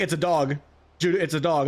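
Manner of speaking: ordinary talk, nothing marked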